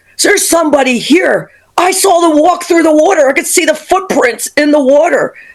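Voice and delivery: play-acted, high-pitched, urgent, alarmed scream. Retelling what a son shouted from the basement: imitating son screaming. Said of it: "My son's screaming at me".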